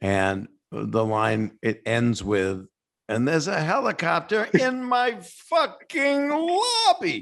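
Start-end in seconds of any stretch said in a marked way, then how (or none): 3.1-7.2 deliberately bad, very high-pitched, furious angry outburst. Quoting the other speaker's movie line, where he got really mad: bad impression of a furious line. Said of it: "I'm doing a bad impression".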